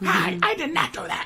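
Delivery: very high, mock yelling voice. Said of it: "That's how my mom talks".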